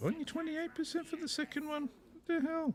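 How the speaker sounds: squeaky, very high, disbelieving voice. Reacting to a low percentage chance in the game: voice going high. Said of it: "My voice goes so high".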